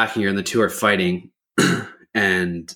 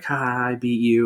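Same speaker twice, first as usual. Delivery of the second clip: play-acted, slow, drawn-out, mild half-shout; 4 semitones higher than usual. Recounting a woman slamming the car door and screaming at another: imitating someone screaming. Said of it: "starts screaming at her like".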